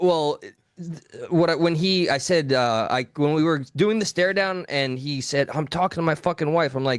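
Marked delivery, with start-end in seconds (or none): 5.5-6.7 put-on angry tone, higher pitch. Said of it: "he's starting to get very aggressive".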